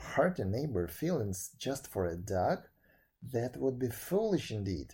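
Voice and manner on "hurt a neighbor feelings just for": plain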